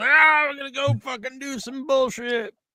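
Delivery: high, wild, crazy mock wrestler hype-up voice. Showing how a wrestler has to come out there, acting all crazy. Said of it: "You got to be all crazy".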